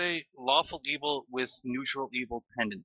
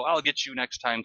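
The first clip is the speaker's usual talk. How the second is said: ordinary talk, nothing marked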